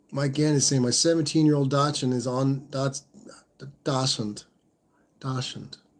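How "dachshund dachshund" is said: soft, put-on fake German accent. Reading out a message about a seventeen-year-old Dachshund, fake German accent. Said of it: "I can't say it without the fake German accent".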